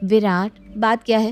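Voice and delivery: plain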